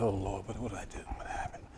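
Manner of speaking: mock barely audible, jittery, nervous, worried murmur. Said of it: "I'm shaking and nervous".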